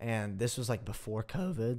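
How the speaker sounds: voice cracking. Describing a show to a friend, the speaker's voice cracks mid-sentence. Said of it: "I knew a voice crack".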